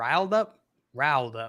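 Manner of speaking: "riled up" said with Southern accent. Repeating a phrase while being teased about it, in Southern accent. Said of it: "you Southern".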